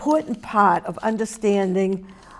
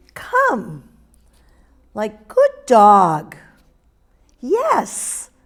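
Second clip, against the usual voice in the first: high, drawn-out, sing-songy tone; 6 dB louder than usual. Showing the tone for praising a dog, drawn-out sing-song praise. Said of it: "it's strung out and sing-songy, like".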